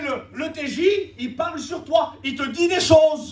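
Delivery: loud, shouted, accusing hostile voice.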